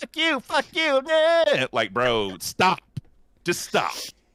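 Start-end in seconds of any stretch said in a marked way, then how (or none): 0.0-1.7 put-on very high, bratty, childish tantrum voice. Mocking a little man who yells and screams at people, imitating a ten-year-old's tantrum. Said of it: "like a ten year old child having a tantrum".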